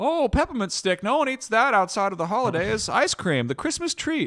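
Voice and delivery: put-on high, loud old-time announcer voice. Mocking how an ice cream maker made a flavor Christmas-only: old-time advertiser voice. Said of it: "your advertiser voice is like a 19th century announcer".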